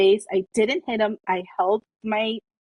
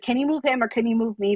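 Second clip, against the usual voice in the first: put-on polite, nice tone. Retelling asking the cops to move a man or herself, retelling a polite request. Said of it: "I was being nice".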